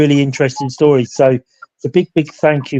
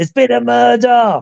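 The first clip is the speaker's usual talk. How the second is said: put-on very high, rasping shout; 9 semitones higher than usual. Retelling a museum visit where a mannequin suddenly shouts: imitating a mannequin's shout. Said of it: "you hear one of them shout out".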